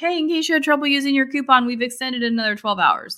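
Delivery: high, fast announcement voice. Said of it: "I was like".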